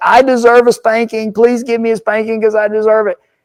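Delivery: mock tearful little boy voice, high and sobbing. Retelling a crying boy asking his father for a spanking: imitating a crying child. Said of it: "the boy is crying, saying".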